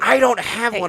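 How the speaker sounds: very high, loud, flustered screech. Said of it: "she was screaming at me".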